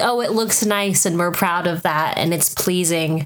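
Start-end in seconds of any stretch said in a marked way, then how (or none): none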